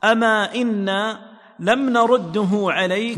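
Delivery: plain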